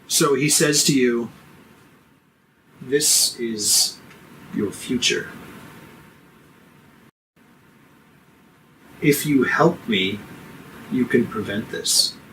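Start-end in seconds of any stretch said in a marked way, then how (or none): 2.8-12.1 earnest, dead serious, with no malice. Voicing the bishop as he speaks to the character: totally serious, no malice. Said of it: "totally serious".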